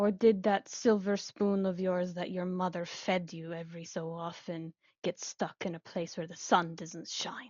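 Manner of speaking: full of malice, with a malicious tone. Voicing a character confronting Juliet, gaze snapping to her: full of malice. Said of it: "full of malice".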